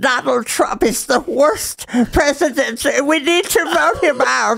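very high, cartoonish, deliberately disrespectful voice. Answering a chat request for another Nancy Pelosi impression. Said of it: "That's my Nancy Pelosi".

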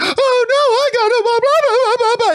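put-on, very high, tearful, whiny crying voice. Speaker mocks Deku's lines in My Hero Academia, mock-crying Deku impression. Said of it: "every single frickin' annoying, irritating line is".

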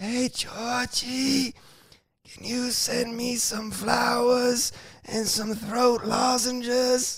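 put-on very high voice of a ninety-year-old man. Retelling a sick girlfriend's phone call, imitating her sounding like a 90-year-old man. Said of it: "sounded like a 90-year-old man".

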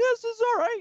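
high, loud, mock enthused exclaiming.

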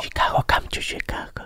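soft, unvoiced whisper. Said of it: "Why do you whisper?".

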